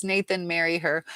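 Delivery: ordinary delivery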